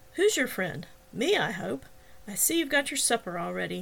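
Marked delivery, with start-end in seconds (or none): none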